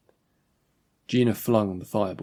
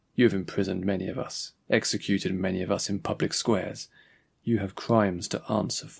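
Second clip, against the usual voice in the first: plain reading voice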